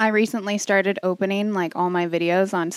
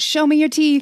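put-on British accent, pitched slightly high; 7 semitones higher, 4 dB louder than usual. Describing an older man calling his two dogs, the speaker is imitating his British accent. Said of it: "in his accent".

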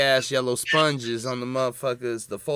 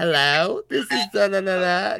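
high, put-on effeminate voice; 8 semitones higher, 4 dB louder than usual.

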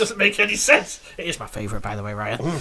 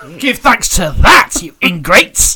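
very loud, slow scolding shout; 12 dB louder than usual. Telling listeners to give thanks, leaning close to the microphone: shouting at listeners. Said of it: "Stop shouting at people".

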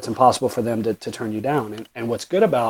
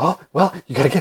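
out-of-breath, puffing voice, pitched up; 5 semitones higher than usual. Doing an impression for fun, breathless Mark Wahlberg impression. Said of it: "'cause he's always out of breath".

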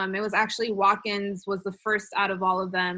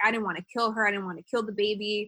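mock-angry, emotional outburst. Recounting a trial, the speaker acts out a man's mock-angry emotional testimony. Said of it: "he would like got really angry".

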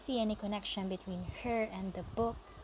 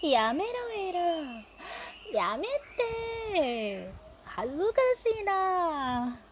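very slow, flustered, embarrassed, high, drawn-out na; 8 semitones higher, 5 dB louder than usual. Narrator reads the narrator protesting while being hugged, embarrassed protest. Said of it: "embarrassed about my own emotions".

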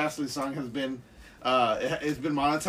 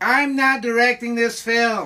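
very loud, belted, slow, high-pitched declaration; 8 semitones higher, 8 dB louder than usual. Imitating the director after his name comes up: David Lynch impression. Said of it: "my David Lynch impression".

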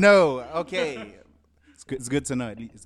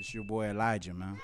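put-on smooth, seductive bedroom voice; 6 semitones lower, 10 dB quieter than usual. Introducing oneself on a podcast mic: put-on bedroom voice. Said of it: "Elijah put on that bedroom voice".

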